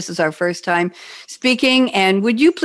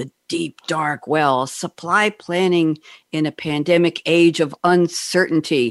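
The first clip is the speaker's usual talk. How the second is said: slow, dramatic movie-trailer announcer reading; 4 semitones lower than usual. Reading out a guest's topic header as a joke: dramatic reading voice. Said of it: "I'm gonna try and do a dramatic reading here".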